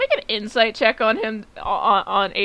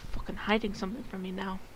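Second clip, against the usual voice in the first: very soft, hushed half-whisper under the breath; 12 dB quieter than usual. Voicing a character muttering to herself as someone walks away: half-whispering to herself. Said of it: "she's now gonna whisper".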